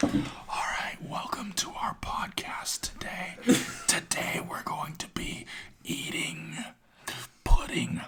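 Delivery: drawn-out, slow, whispered podcast voice. Mocking a podcast intro for listeners who want it: mock slow podcast voice. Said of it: "But, like, really slow".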